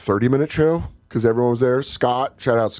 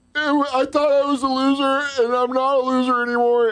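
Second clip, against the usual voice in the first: mock very high, weepy sobbing talk; 13 semitones higher than usual. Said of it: "grown men crying".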